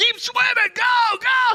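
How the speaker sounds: very high, very loud, drawn-out screaming yell. Retelling how a brother screamed at a swimmer in the dark: imitating Ryan screaming. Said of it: "he's screaming at Ella".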